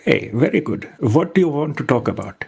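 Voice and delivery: put-on Indian English accent. Chatting with another speaker in English: put-on Indian accent. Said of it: "doing the Indian accent".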